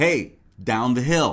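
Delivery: a little exasperated, mildly frustrated tone. Describing a clip, the speaker acts out the guy's call, imitating slight frustration. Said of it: "Like he's a little frustrated".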